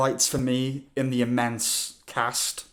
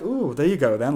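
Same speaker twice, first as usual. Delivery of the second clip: mock teasing, taunting, jeering tone. Imitating a character waving a hanky at Oppenheimer: imitating a mocking taunt.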